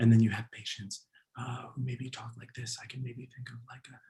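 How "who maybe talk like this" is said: weak, quiet voice, getting quieter. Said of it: "a weak voice quality".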